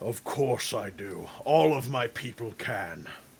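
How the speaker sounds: threatening genie voice, very slow and drawn out. Voicing a genie asked about granting wishes: menacing genie voice. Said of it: "he looks down at you menacingly and says".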